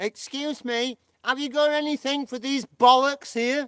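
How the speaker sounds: high, loud, put-on American girlfriend voice. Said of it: "having an American girlfriend".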